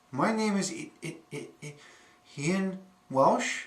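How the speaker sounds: stuttering. Introducing oneself by name, stuttering. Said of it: "I am a person who stutters".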